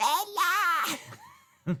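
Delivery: very high, straining, hoarse yell. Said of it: "My voice is completely gone".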